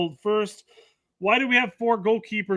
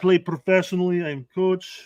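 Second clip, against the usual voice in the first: put-on Russian accent. Mocking Poach answering people who question him on socials, in a fake Russian accent. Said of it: "went Russian there almost all of a sudden".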